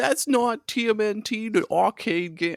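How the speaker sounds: put-on high eight-year-old little kid voice. Retelling telling off other kids at the arcade as an eight-year-old, eight-year-old kid voice. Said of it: "I'm trying to do an 8-year-old voice".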